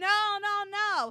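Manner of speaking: high-pitched, very loud, full-out screaming. Recounting how a man watches his father get shot, retelling a scream. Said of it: "And he's screaming".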